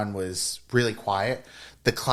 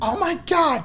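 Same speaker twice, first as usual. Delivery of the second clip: play-acted shrill, very high, really loud squeal; 3 dB louder than usual. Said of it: "one girl who was really loud".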